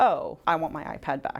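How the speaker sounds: plain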